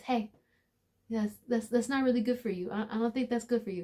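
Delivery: gentle, soft, hushed stage half-whisper. Acting out God gently warning someone about a bad choice: half-whispering as God. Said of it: "God whispers to you first".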